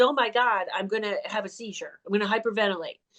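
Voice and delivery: plain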